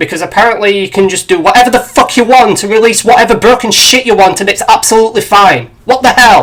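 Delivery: worked-up, exasperated outburst. Complaining about a game's broken release, getting irate. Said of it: "I'm getting a little irate".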